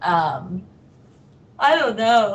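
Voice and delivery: words pushed out while yawning. Answering questions about making cover videos, yawning. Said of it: "Sorry, I'm yawning".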